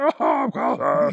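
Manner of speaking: put-on frog puppet voice. Voicing Cowshead after a request for a scarier voice: voice like Kermit the Frog. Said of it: "You definitely sound like Kermit".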